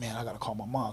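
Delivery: ordinary delivery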